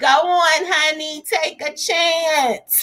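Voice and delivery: put-on little old lady voice, very high, very slow, stretched. Repeating a viewer's quoted line in the Coming to America voice. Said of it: "In my Coming to America voice".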